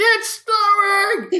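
very high, squealing, screeching shout. Retelling running around the house when it snows: screaming like Pee-wee Herman. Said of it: "running around the house screaming".

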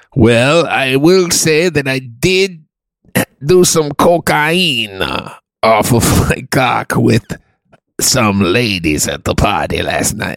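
put-on German accent. Playing a guy being questioned: German accent. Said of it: "I have a very good German accent".

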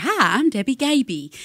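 put-on high voice with thick, heavy Southern accent. Introducing yourself as the woman from Sleep America, very Southern Debbie Gaby impression. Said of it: "she was like very Southern".

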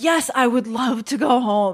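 put-on thrilled, eager, excited, drawn-out delivery. Retelling own reply to a managing director: imitating own excited reply. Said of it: "all excited".

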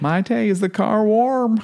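mock very high, playful joking call. Retelling how he asks maite about the car; retelling a joking voice. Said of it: "he says it in this joking voice".

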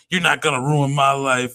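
half-hearted, mild, held-back shouted protest. Retelling a movie scene where she was yelling: imitating someone yelling. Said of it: "she was just yelling".

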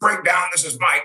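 the gruffest, extremely gruff voice. Retelling how a coworker at the breakdown desk answered the phone: gruffest voice. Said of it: "with the most gruffest voice you've ever heard".

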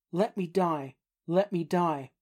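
ordinary delivery

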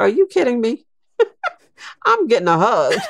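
delighted, high, quick laughing exclamation.

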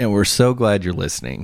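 heavily sarcastic, swooping sing-song delivery. Welcoming listeners to the podcast, sounding very sarcastic. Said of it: "I know that sounded very sarcastic".

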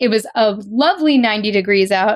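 normal talking voice

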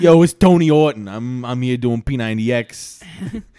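put-on Boston accent. Joking about a pirated Boston edition of P90X, bad Boston accent as Tony Orton. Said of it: "Why do I Let's sound like this Boston".

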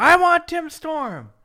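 very loud, high, wild, drawn-out demanding yell. Retelling how a man grabbed the headset on air, imitating someone yelling. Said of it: "And he yells".

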